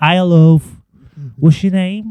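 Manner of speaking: very high, loud, shrill Scouse woman's voice. Retelling what the wee Scouse woman would ask on walking in, imitating her Scouse accent. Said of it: "the wee Scouse woman would be".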